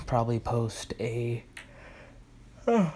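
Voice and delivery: slow words dragged out by a yawn. Speaker yawns mid-sentence while talking to viewers, yawning while talking. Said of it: "excuse me, I'm yawning".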